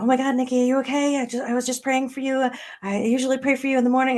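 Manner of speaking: high-pitched, frantic, panicked voice. Retelling how a mother answered the phone: imitating her mom's panic. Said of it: "answered the phone in this, like, panic".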